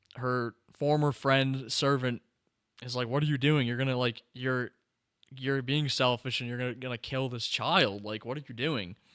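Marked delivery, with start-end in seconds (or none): none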